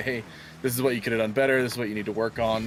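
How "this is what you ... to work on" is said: ordinary talk, nothing marked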